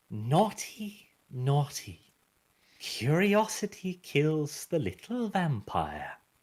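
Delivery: soft, sweet, honeyed whisper. Narrator reading a story, voicing a whispering voice: soft honeyed whisper. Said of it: "The the voice whispers softly with a honeyed tone".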